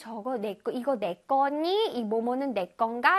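ordinary delivery

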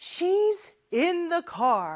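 very slow, clear, carefully spoken delivery. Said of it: "아빠가 대답을 해주셨네요".

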